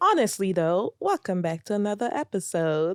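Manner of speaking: terrible, bad, fake put-on British accent. Welcoming back to another episode in a bad british accent. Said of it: "That was my British accent".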